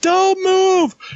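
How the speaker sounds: loud screaming voice. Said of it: "he's, like, screaming instructions at me".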